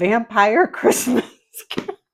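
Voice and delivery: words breaking into laughter. Trying to keep a straight face reading a book title: laughing while talking. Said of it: "I failed".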